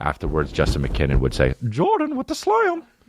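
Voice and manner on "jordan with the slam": very high, piping, high-pitched play-by-play commentator delivery. Retelling what Justin McKinnon said after dunks in a Bulls game, Justin McKinnon's high-pitched voice. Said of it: "He would do it in a high pitched voice".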